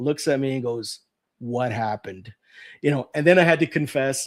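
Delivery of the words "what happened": mock grave, very serious, sober, very low voice. Retelling the mother turning to the speaker: imitating a very serious tone. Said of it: "very serious".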